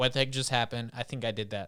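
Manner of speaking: ordinary delivery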